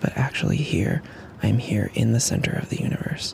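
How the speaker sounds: soft, hushed whisper.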